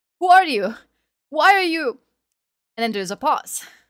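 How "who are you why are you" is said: very high, very loud, pleading, imploring shout. Voicing an armed archer confronting the group: shouting, imploring. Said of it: "a voice just shouting, imploring".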